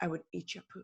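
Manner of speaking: very soft, put-on sexy Spanish accent. Retelling what a fellow performer said after an accident: imitating a sexy spanish accent. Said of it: "a sexy Spanish accent".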